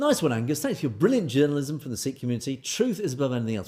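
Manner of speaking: normal talking voice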